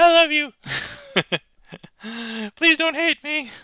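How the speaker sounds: extra high-pitched voice, pitched way up. Apologizing to someone before using the clear cards: extra high-pitched voice. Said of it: "Did I go extra high pitch?".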